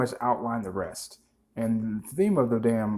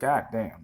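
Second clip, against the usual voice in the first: ordinary talk, nothing marked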